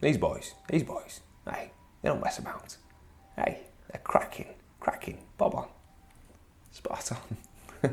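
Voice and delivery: breathy, half-whispered put-on voice. Making breakfast in a Guy Martin impression. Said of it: "Today it was Guy Martin".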